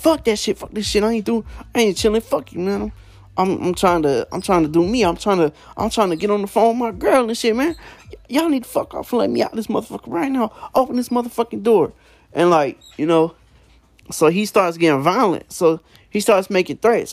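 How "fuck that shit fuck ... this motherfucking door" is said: mock-angry ranting voice, higher in pitch. Telling a story, the speaker acts out the roommate refusing to chill, retelling a pissed-off roommate. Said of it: "the roommate starts getting all pissed off".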